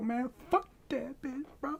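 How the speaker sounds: put-on very high-pitched drunken ranting. Retelling what a drunk friend kept saying on the walk: imitating a drunk friend. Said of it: "He's drunk as hell".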